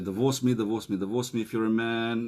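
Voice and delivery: ordinary talk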